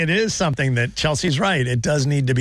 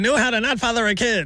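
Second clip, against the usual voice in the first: put-on old-timey movie voice, higher and faster; 6 semitones higher than usual. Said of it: "maybe in that old-timey voice".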